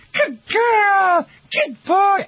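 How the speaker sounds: put-on very high, slow voice, "girl" drawn out. Speaker showing owners how to praise their dog, in high-pitched praise. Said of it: "high pitch".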